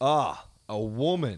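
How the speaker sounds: sneering heckler jeer. Retelling what a heckler said at a comedy night: imitating a stereotypical misogynist heckler. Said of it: "he said it in such a stereotypical way that a heckler".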